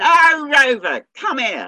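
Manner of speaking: loud, high, swooping, sing-song London Cockney holler. Imitating a dog owner on the heath calling their dog, Cockney voice calling out. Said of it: "a London Cockney voice calling".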